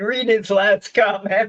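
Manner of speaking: speaking through laughter. While going through on-screen comments, asks the other speaker to continue, laughing while talking. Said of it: "Sorry, I'm laughing".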